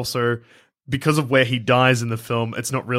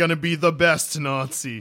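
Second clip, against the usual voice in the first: mock Italian-accented delivery; 3 semitones higher than usual. Quoting the villain Red Skull: Red Skull with Italian accent. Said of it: "Does he say it with an Italian accent?".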